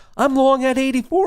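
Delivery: mock screaming outburst, very high-pitched. Recounting an hour-long wait for an order fill, retelling own screaming. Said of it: "I'm screaming".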